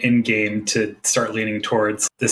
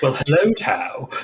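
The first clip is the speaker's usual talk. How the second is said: very uptight, stuffy butler voice; 4 semitones higher than usual. Pitching how the character would greet Tao, uptight Alfred Batman voice. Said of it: "a very uptight Alfred Batman voice".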